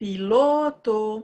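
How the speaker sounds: piloto with the middle lo drawn out. Calling out piloto to find its stressed syllable: lengthened lo in piloto. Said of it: "Como que você chamaria o piloto?".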